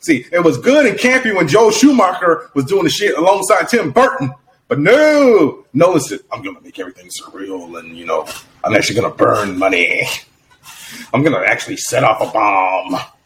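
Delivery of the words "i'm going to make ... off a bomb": low, dropped-down character voice. Imitating the director boasting about making everything real: Heath Ledger's Joker voice. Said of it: "is that your impression of Heath Ledger's Joker?".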